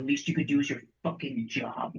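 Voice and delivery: hushed, quiet, spoken very close. In a story game, a player's character leans down to a woman: quietly in her ear. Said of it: "just quietly in her ear".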